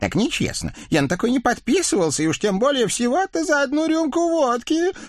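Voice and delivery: squealing outburst climbing very high. A skinny devil suddenly cries out while shaking off his rider; shrieking. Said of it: "неожиданно взвизгнул тощий черт".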